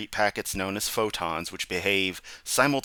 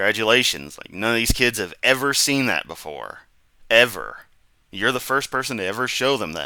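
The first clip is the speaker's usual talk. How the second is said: loud, mocking, dripping sarcasm; 5 dB louder than usual. Commenting on a mirror demonstration: sarcastic. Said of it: "this is sarcasm".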